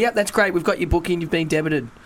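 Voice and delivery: normal talking voice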